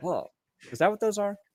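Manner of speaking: high-toned society socialite voice. Imagining a football coach at a press conference: Adam Gase as a socialite. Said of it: "he's like a, uh, a socialite".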